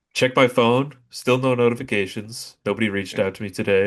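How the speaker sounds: usual speaking voice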